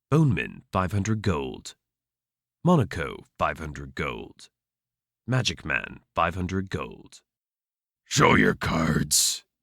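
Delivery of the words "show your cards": deep, bass, grumbling troll voice. Narrating a tavern card game, the troll speaks up in a grumbling bass baritone. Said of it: "the troll grumbles in his bass baritone".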